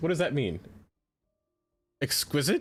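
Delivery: voice breaking, cracking badly on "exquisite". Asking what a misread word was meant to be, voice cracking. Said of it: "My voice just cracked just now in a horrible way".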